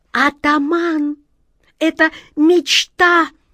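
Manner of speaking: shrill, high, sudden squealing shriek. A cat cuts off her chieftain, leaping from the windowsill, squealing. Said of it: "взвизгнула черная кошка".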